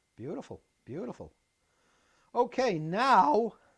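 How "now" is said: very loud voice breaking mid-word. Guiding someone tilting something to see inside: voice cracking. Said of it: "did you hear my voice crack?".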